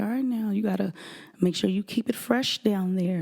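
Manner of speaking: sophisticated, refined, ladylike voice. Retelling advice from the first lady, imitating her soft speech. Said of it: "she would talk real soft".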